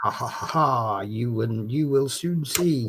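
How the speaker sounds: low, mocking, villainous evil laugh.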